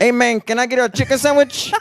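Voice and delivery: put-on Spanish accent, squeaky and very high pitched. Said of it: "speak English in a Spanish accent".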